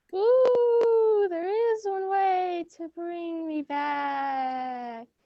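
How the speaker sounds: eerie ghostly voice with drawn-out "ooh". Narrator voicing a statue's reply, ghostly voice. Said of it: "a ghostly voice emanated from the statue".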